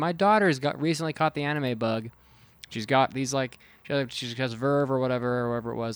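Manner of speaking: ordinary talk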